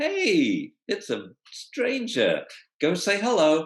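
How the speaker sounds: happy sing-song voice. Showing a dog owner what to say to the dog as a stranger approaches, happy voice. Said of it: "in a happy voice".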